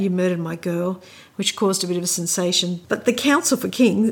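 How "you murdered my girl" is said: normal talking voice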